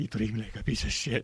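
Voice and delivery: acted-out tearful, welling up, close to crying. Retelling what a woman said in a store as she teared up: imitating someone tearing up. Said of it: "starts tearing up".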